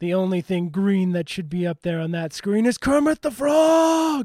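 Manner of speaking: forceful, spirited, emphatic delivery. Retelling someone's remark and adding gumption to it. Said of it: "I just kind of felt like adding that, you know, a little gumption to it".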